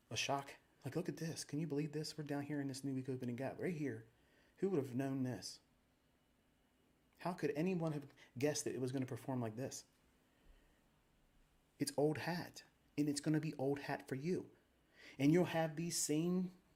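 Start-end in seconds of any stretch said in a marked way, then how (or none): none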